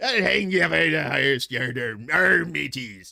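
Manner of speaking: loud stock pirate voice. Between news items about ireland, lapsing into a pirate voice. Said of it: "that's pirate talk".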